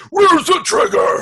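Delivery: high, slow, shouted silly gravelly voice. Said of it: "his voice got sillier as it went".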